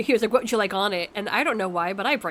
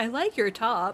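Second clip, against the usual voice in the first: put-on, very drunken woman's voice; 3 semitones higher than usual. Retelling a woman who stopped her while she walked past, imitating a drunk woman. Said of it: "very drunkenly, she's like".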